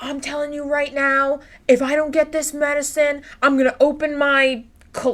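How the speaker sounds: put-on, high, furious ranting shout. Retelling how an angry customer at the pharmacy threatened staff: imitating a man yelling. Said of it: "he started yelling".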